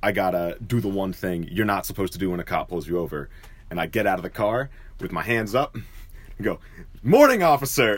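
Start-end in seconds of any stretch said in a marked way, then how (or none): 7.0-8.0 big, loud, booming, pitched-up voice. Retelling getting out of the car, hands up, to a cop: retelling a loud booming greeting. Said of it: "And loud, booming voice!".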